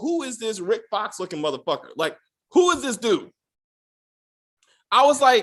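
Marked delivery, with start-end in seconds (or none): none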